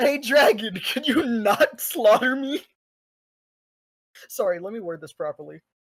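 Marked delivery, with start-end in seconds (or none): 0.0-2.6 loud, high calling out. Player calls out to a dragon on their turn, shouting out into the air. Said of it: "you're talking out to the air like you're shouting?".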